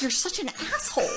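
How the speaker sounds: hushed, annoyed mutter under the breath. Retelling watching a husband who stood by during grocery loading: imitating muttering under breath. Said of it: "under my breath".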